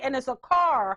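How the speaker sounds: ordinary delivery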